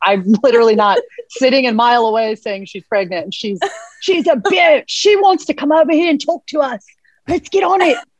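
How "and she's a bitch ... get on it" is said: put-on Australian accent in a nature-show presenter style. Acting out a host checking out a crocodile, in an Australian wildlife host accent. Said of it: "that accent is like impeccable".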